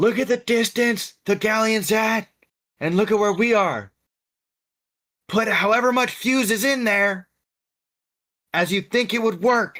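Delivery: high-pitched, in-character yell. Shouting in character to two crewmates about the fuse length: in-character yell. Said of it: "I'm gonna yell to Uzumaki and Brick".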